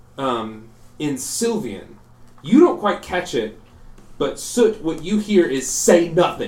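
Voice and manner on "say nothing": blurted shout, yelled like a curse. Voicing a character who knocks over an inkwell: shouting it like a swear. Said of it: "He just shouts it as if it was a swear".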